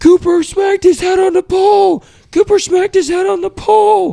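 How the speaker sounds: loud, very high, frantic, panicked scream. Speaker retells someone sprinting back to the group, screaming: retelling a panicked scream. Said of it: "he's screaming".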